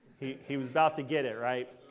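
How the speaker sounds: plain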